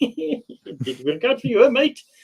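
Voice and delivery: very high, swooping, sing-song teasing taunt. Retelling own taunt to a player shot in a game: retelling own in-game taunt, Irish-or-Scottish sounding. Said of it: "They always thought I was, like, Irish or, uh, Scottish".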